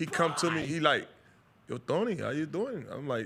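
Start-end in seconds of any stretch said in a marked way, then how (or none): 1.7-2.8 put-on male Dubai accent. Telling a story about a man who came up to him, doing the man's accent. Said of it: "You didn't have to do the accent".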